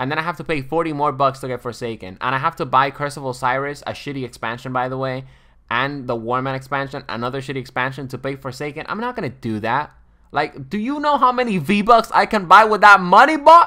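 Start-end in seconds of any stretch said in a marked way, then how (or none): 10.3-13.7 shrill, very loud, high-pitched raised-voice outburst. Complaining to viewers about paying for game expansions: raised voice. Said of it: "I'm raising my voice".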